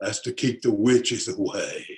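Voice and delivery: put-on deep man's voice from back of throat. Storyteller quoting Ray's answer to his question: imitating Ray's deep throaty voice. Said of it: "talked way back down in his throat".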